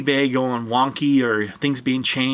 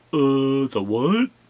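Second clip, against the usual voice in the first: mocking, blank, clueless-sounding tone. Imitating people who ask about the shipping calculator: mocking tone. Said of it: "using that tone of voice".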